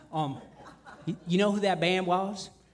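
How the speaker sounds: really bad put-on Southern drawl, high and slow. Speaker retells what the American tour manager told him on arrival: bad Southern accent as Jordy. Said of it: "I'm doing a really bad Southern accent".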